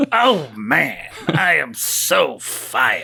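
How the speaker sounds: put-on elderly man voice. Quoting a movie cameo line as the old security guard: Stan Lee voice. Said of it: "in a very Stan Lee-y sort of way".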